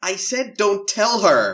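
put-on very high, very slow little-boy American accent. Speaker quotes a favourite line from a movie, in a wee boy American accent. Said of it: "That's my wee boy American accent".

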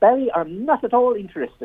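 high, plummy upper-class posh voice. Retelling a boxer turning down a fight offer: imitating Joe's high posh voice. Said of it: "Joe's got quite a high voice and quite posh".

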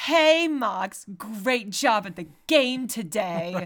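airheaded, ditzy bimbo voice. Discussing a show, imitate how a teacher character talks: ditzy bimbo voice. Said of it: "She also just kind of talks like a bimbo".

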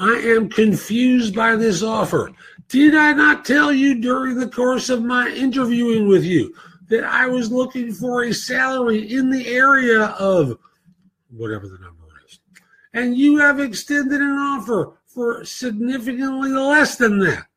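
exaggerated, very high, cartoonish caricature voice. Showing how to answer a low salary offer with humor, in a caricature voice. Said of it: "I'm doing it in a caricature voice".

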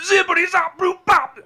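very high, loud, cartoonish voice. Showing the others the cartoonish Bill Cosby impression: cartoonish Bill Cosby impression. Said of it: "cartoonish Bill Cosby impression".

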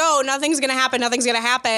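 ordinary talk

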